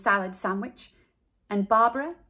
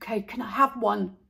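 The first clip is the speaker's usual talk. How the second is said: hushed whispering. Buster whispers again to Carla while no one is watching; whispered. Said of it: "He whispered again".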